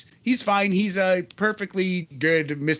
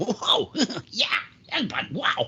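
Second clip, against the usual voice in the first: cartoon voice, words stretched badly; 3 semitones higher than usual. Reacting to a headbutt mentioned in a match recap: terrible Beavis impression. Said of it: "that was my Beavis impression".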